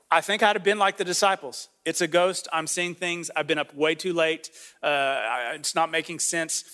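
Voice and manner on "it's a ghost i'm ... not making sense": usual speaking voice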